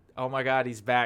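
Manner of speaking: usual speaking voice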